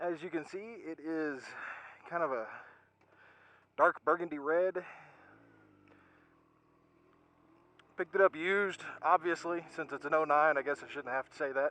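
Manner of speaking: out of breath. Describing something he picked up used, just after climbing a mountain: out of breath. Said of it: "excuse me for being out of breath".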